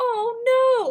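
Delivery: mock-sad, very high-pitched, drawn-out "oh". Retelling a TV scene where Debbie hears of a death: imitating sad Debbie. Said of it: "Debbie's all sad about it".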